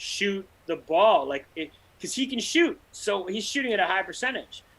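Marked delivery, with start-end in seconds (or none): 0.0-1.3 loud, acted-out yelling. Retelling yelling at a player on tv: imitating screaming at the tv. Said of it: "I'm screaming at my T V".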